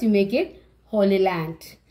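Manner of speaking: usual speaking voice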